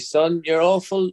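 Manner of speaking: put-on high Belfast accent. Repeat what your mum always used to say to you, imitating her Belfast accent. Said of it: "I'm doing her voice".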